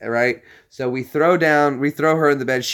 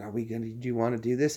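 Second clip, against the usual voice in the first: imitated whisper, quieter; 2 semitones lower, 11 dB quieter than usual. Retelling overhearing a friend in bed at night: imitating someone whispering. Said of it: "I can hear him whispering".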